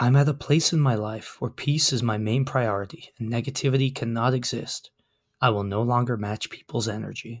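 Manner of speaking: very soft, even, unhurried calm voice. Asked not to shout, saying a capital-letters quote very softly. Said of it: "I'm gonna say it very softly then".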